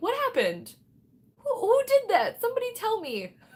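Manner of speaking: very high, swooping excited voice with rising pitch. Streamer trying to find out who sent a donation, in a high voice. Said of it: "My voice is so high".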